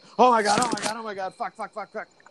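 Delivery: high, fast, rattled-off, frantic, crazed panic. Retelling how the man who broke his leg went crazy. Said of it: "he actually goes crazy".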